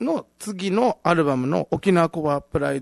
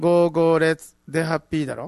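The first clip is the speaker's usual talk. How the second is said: ordinary delivery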